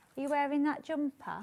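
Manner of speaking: acted, pointed, very questioning delivery. Retelling what Ian Munro asked about the jumper: imitating a questioning voice. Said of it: "in a very kind of questioning voice".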